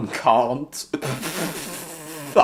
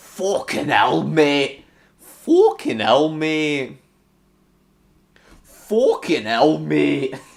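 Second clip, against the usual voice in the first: put-on Scottish accent, louder; 3 semitones higher, 5 dB louder than usual. Exclaiming at something that just happened in the game: Scottish accent. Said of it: "Why am I now talking in a Scottish accent?".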